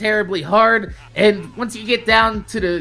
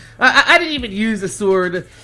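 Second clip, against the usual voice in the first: ordinary talk, nothing marked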